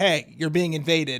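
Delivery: ordinary talk, nothing marked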